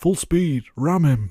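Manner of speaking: loud, high, shouted, badly done South Yorkshire accent. Quoting an actor from Sheffield shouting in a film, shouted bad South Yorkshire accent. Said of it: "I'm going to butcher the South Yorkshire accent here".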